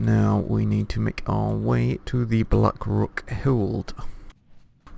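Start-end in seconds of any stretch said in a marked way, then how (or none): 0.0-3.9 slow, oddly stretched voice like a tired tour guide. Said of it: "I have no idea why I'm talking like this".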